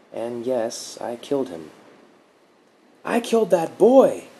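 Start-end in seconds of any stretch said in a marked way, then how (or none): 3.0-4.2 very high, loud, abrupt, sudden outburst. A driver suddenly realizes aloud what he has done, blurting out. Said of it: "Mark blurted".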